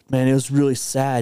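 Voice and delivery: ordinary talk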